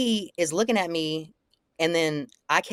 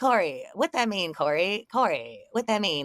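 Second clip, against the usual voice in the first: put-on teasing, needling, mocking tone; 3 semitones higher than usual. Retelling a confrontation on the sidewalk: retelling a mocking taunt. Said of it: "making fun of him".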